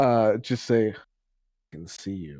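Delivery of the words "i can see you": muttered quietly under the breath. Speaking in character while staring up at a scrying sensor: under the breath. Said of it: "under his breath".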